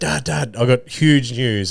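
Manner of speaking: bursting with excitement, words drawn out. Retelling his son jumping into the ute: imitating an excited son. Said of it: "all excited".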